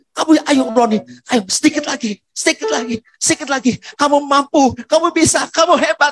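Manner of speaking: high, loud cheering. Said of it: "tiba-tiba suaranya berubah".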